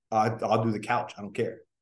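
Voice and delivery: ordinary talk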